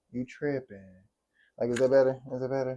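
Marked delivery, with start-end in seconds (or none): 0.1-0.8 fake softened tone, lower and quieter. Repeating a point in a nicer tone, as if to calm someone: mock gentle tone. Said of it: "I'll say it better for you".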